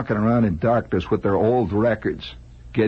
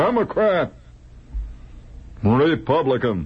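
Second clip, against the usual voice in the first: clear, plain-spoken, pitched-up, acted delivery; 5 semitones higher than usual. Describing people registering to vote who declare their party: loud, clear voice. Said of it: "they say in a loud, clear voice".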